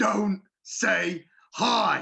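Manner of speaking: rough, menacing, aggressive gravelly voice. Speaker recalls being thrown against a locker, quoting Mister Burns mock-aggressive and gravelly. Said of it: "like aggressive gravelly voice".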